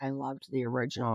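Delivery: soft, hushed stage half-whisper. Retelling what a friend said in a theater: imitating Megan's half-whisper. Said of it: "whispers to me".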